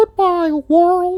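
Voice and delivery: squeaked out, very high-pitched. Joking with a colleague about a dead man's last words, in a Mickey Mouse voice. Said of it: "said in a Mickey Mouse voice".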